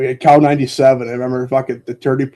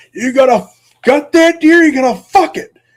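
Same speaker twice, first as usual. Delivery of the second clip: very high, shrill belted holler; 13 semitones higher, 7 dB louder than usual. Retelling dad yelling across a hill on a deer hunt: imitating dad belting out a yell. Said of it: "belts out".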